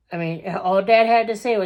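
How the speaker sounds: usual speaking voice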